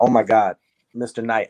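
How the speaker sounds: frightened, suddenly deferential and respectful tone. Retelling own words when facing a tall man: imitating own scared voice. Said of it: "I was so scared I called him Mister Knight".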